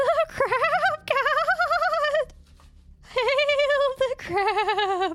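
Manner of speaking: very high, very slow, shrill, fierce, drawn-out scream. During a game, narrating Blurble's attack, screaming. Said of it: "As he just screams".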